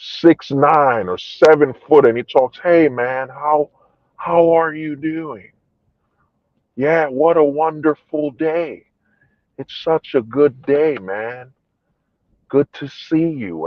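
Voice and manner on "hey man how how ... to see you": soft, toned-down, feminized put-on voice. Imitating a very tall guy's greeting, in a feminized put-on voice. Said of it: "dumb it down and feminize it".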